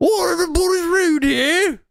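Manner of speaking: shoddy English accent, very high pitched. Doing voices over a clip as an excuse, in a shitty English accent. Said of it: "shitty English accents".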